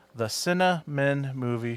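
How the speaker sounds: spoken slowly. Reading a podcast network promo, saying a show title slowly. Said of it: "the title of the show that I have to say slowly".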